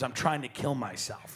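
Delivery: grave, earnest, dead serious delivery. Retelling a friend's words after a boat crash: imitating a very serious tone. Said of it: "he said it very seriously".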